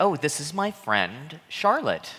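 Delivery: high, sing-song phony put-on voice. Retelling how a woman introduced her friend, using her fake voice. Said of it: "how come you're using your fake voice?".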